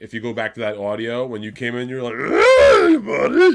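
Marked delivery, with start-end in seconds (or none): 2.1-3.6 very high, loud, belted puppet-character voice. Imitating how the other speaker sounded on the audio: Fraggle Rock character voice. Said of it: "You sounded like a Fraggle Rock character".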